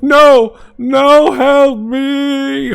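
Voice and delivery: very high, very loud muffled cry, "me" drawn out. Narrating a campaign scene, voicing a guy behind a closing door: muffled voice. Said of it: "like the muffled voice of that one guy".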